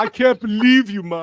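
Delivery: put-on high, slow, drawn-out Jamaican-style voice. Quoting a movie line to the others: imitating Rick Moranis going Rastafarian. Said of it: "he becomes like a Rastafarian all of a sudden".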